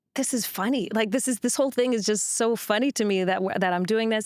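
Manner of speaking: plain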